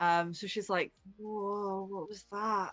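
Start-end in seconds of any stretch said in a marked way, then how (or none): 1.2-2.7 dazed, woozy, quieter. Voicing a character just fed on, now on cloud nine: woozy. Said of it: "she's very woozy".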